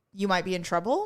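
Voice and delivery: plain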